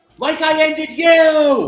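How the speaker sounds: very high, very loud shriek of terror. Voicing a character who answers a haunting voice: terrified scream. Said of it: "I'll just scream out".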